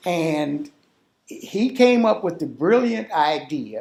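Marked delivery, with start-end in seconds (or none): none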